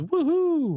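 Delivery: cheering. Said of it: "Frank the Bald Guy says".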